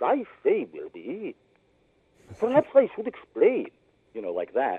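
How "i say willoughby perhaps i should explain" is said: squeezed-cheek voice with a high upward swoop. A voice actor shows how he voices his character: the Professor's voice. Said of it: "I actually hold my cheeks when you do his voice".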